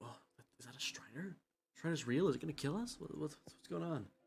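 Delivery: whispering crowd. Voicing onlookers around a stranger, whispering crowd.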